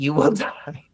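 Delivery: chuckling, laughing through the words. Talking with another speaker about something serious, laughing while talking. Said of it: "I know I'm laughing".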